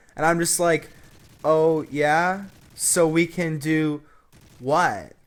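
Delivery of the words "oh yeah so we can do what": very slow, clueless, oblivious tone. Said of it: "Kind of in, like, oblivious tone".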